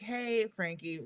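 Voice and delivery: mock very hushed, grave, somber, very quiet tone. Retelling a phone call, imitating the director of talent greeting them in a very somber voice. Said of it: "very somber voice".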